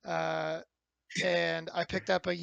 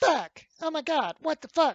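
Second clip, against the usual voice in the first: very high, screeched, screaming voice; 9 semitones higher, 6 dB louder than usual. Recalling screaming at zombies while the other two kept talking: imitating own screaming. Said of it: "Screaming at all these zombies".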